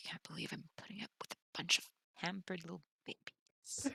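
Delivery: quiet grumbling mutter under the breath. Voicing a character grumbling about pampered babies: muttering under her breath. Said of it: "muttering under her breath".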